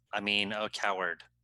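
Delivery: ordinary talk, nothing marked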